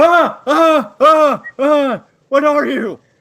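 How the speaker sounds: very high, very loud shrieking. Narrating a game scene, voicing a guy as the door opens loudly: screaming. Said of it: "a guy go up screaming".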